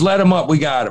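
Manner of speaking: ordinary delivery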